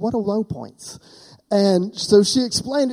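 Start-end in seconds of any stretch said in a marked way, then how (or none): 0.0-1.0 put-on tiny, soft, sweet little-girl voice. Retelling what Hope asked, imitating Hope's sweet little voice. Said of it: "In her sweet little voice".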